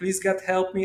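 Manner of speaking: usual speaking voice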